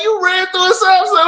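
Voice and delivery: mock high-pitched, mad, accusing hollering. Retelling what a driver yelled out the window: imitating a woman yelling. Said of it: "She yelled out the window like".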